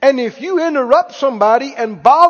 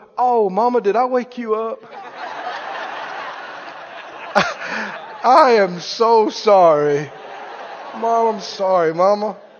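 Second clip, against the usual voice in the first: put-on, very slow, breathy, whispered baby voice; 4 semitones lower, 4 dB quieter than usual. Acting out a crying baby apologizing to its mother: imitating a baby talking. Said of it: "the baby looks up and goes".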